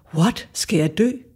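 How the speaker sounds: put-on deeply shocked, frightened voice. Retelling what a man in his seventies said in their conversation, acting out deep fright. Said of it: "han var dybt forskrækket".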